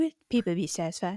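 bratty cartoon kid character voice. Joking about how much they kept saying it about Rise of Skywalker, in a Cartman voice. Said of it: "I just made that sound like Cartman from South Park".

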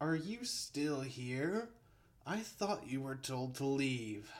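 put-on tipsy, lightly amused sighing. Narrator reads a man's line in a story: sighing, amused and drunk. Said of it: "Thabis sighed, a hint of amusement still in his intoxicated voice".

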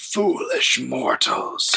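rough, creaky, rasping, snarling growl. Narrating a spectral elf who confronts intruding mortals, snarling. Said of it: "she snarls".

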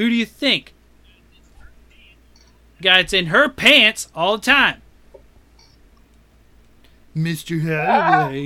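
taunting, derisive, snide mocking tone. Recapping a story to another speaker, retell a character's reply as a mocking imitation. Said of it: "he says mockingly".

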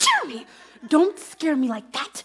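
speaking in a whisper. A character startled by someone approaching, whispering. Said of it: "Why are we whispering?".

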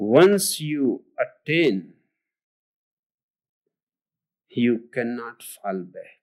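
deliberately very slow, hypnotic, drawn-out delivery. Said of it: "He talks so slowly".

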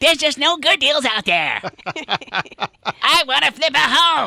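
very high-pitched cartoon kid voice. Asked to repeat a caller's words again, in a Cartman voice. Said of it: "I sound like Cartman".

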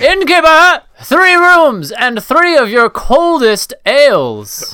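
very loud, very high bellowing yell, "ales" drawn out. A character bursts into an inn and calls to the innkeeper, yelling out. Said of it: "yell out to the innkeeper".

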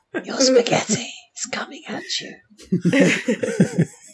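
put-on poltergeist-style, creepy, whispered child's voice. Saying a waiter's line as a joke: put-on creepy child voice. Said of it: "creepy children to say it in a sort of, um, poltergeist style".

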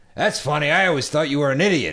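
high, loud, curmudgeonly, acerbic voice. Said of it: "curmudgeonly, acerbic father".

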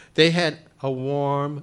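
ordinary delivery

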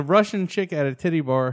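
ordinary talk

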